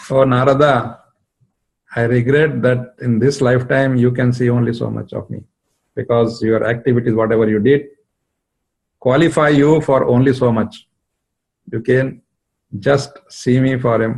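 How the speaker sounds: ordinary talk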